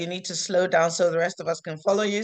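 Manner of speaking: normal talking voice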